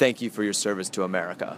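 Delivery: ordinary talk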